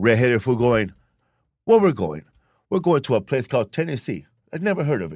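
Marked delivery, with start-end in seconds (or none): 1.6-5.2 sing-song, put-on Irish accent. Describing Irish immigrants boarding a boat, quoting them in an Irish accent. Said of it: "they're talking with their Irish accent".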